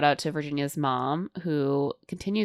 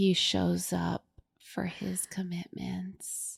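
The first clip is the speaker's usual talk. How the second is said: put-on sleepy talking voice, higher and quieter; 4 semitones higher, 9 dB quieter than usual. Retelling a bride getting her makeup done, imitating Virginia's sleepy talk. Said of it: "in full Virginia sleepy talk mode".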